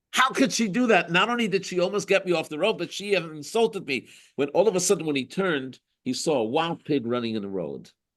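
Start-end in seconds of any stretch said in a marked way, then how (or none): 0.1-4.0 acted-out, outraged angry rant, pitched up. Telling a story about a driver a passing woman insulted: mock-angry man. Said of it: "He got so angry".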